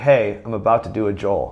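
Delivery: ordinary talk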